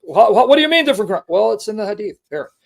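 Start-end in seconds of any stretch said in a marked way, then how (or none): 0.1-1.2 rattled-off, fast, upset delivery. Telling a story, the speaker acts out a man's father getting upset, imitating an upset father. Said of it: "his father got upset".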